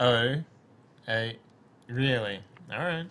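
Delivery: slow, condescending, patronizing drawl. Explaining what condescending sounds like, giving an example in a condescending tone. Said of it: "condescending's more like".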